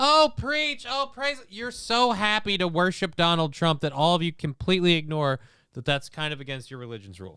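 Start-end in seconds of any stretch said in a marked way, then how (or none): 0.0-1.4 very high, drawn-out cheering calls. Mocking the people in the background of a sermon: imitating cheering worshippers. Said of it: "people in the background are".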